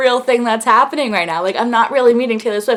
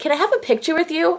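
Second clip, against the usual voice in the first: mock cute voice, higher and quieter; 5 semitones higher, 6 dB quieter than usual. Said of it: "she says that to me, like, like, really, like, cute".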